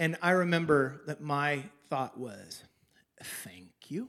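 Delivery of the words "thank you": put-on entitled tone, lower and quieter. Retelling picking up a hard-earned paycheck: imitating own entitled thank-you. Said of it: "That's how I said thank you".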